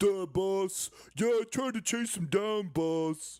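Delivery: goofy, high-pitched, dopey cartoon character voice. Acting out an incompetent worker answering the boss: cartoon character voice. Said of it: "why are you talking like that?".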